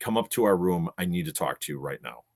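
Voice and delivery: ordinary talk, nothing marked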